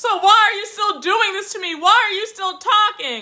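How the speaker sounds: tearful, crying, sobbing, pleading tone. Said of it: "she's just crying and sobbing".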